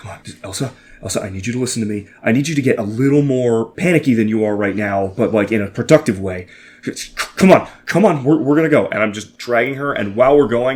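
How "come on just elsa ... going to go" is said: urgent, pressing, coaxing delivery. Voicing a character dragging a limp companion, urgent pleading to get moving. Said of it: "just trying my best to be like".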